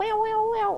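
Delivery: high-pitched wail like a fire alarm. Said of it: "That was a really good fire alarm impression".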